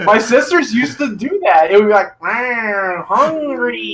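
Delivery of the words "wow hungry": run-down robot toy voice, drawn-out wow. Speaker acts out how the sisters used to do it: dying Furby voice. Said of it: "Furby with battery dying".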